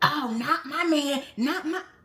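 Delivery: high, slow, offended and guarded, with a shifted cadence. Speaker mimics how a woman's voice changed mid-conversation: imitating her changed cadence. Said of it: "the cadence in her voice kind of changed".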